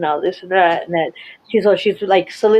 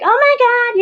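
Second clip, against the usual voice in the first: very high, whining, complaining voice. Retelling what a woman said when she went bonkers: imitating a whiny voice. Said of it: "kind of whiny".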